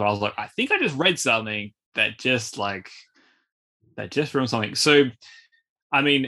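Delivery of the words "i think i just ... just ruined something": normal talking voice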